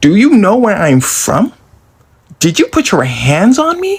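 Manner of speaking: play-acted furious, confrontational, swooping pitch. Telling a story about a staff member, retelling cussing someone out. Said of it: "I begin to cuss her out".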